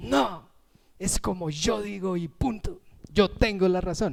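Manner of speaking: obstinate, stubborn, know-it-all, insistent tone. Acting out how a stubborn person talks: imitating a stubborn person.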